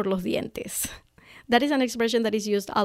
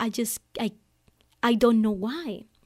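put-on sobbing, choked, broken-up speech. Retelling own words at lunch while bawling: retelling own crying. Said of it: "I'm bawling my eyes out".

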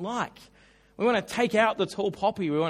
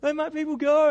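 put-on higher, whining teenage voice; 7 semitones higher than usual. Retelling a plea to Pharaoh the way a pimply teenager would: mock whining teenager. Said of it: "sounds like the cry you'd hear from a little pimply teenager".

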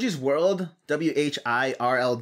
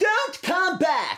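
nasty, loud, very high-pitched, dismissive. Performing a requested line three times, the second half: mean and loud. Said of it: "and then mean and loud for the second half".

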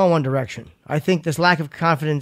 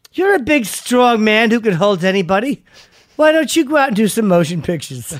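fawning, starstruck, high gushing fangirl tone; 6 semitones higher than usual. Retelling own past compliments, imitating a fawning fangirl. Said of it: "I sound like a fawning fangirl".

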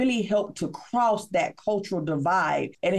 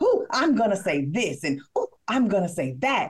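put-on eager, gushing, excited swooping sing-song. Retelling practicing in the mirror before meeting Les Brown: retelling own excited rehearsal. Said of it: "I was so excited".

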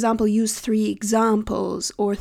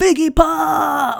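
mock rough, loud raspy yell, pop stretched; 6 semitones higher, 5 dB louder than usual. Picking up a phone call from an IT coworker with a nickname, retelling a yell. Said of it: "I just pick up the phone and yell like".

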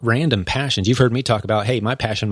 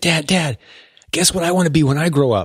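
put-on eager teenager voice, pitched up, excited; 5 semitones higher than usual. In a role-play, playing an excited 15-year-old coming in to talk to Dad. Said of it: "I'm an excited 15-year-old".

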